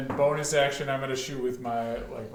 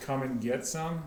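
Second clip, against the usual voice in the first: ordinary talk, nothing marked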